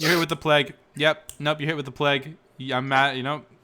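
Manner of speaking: ordinary talk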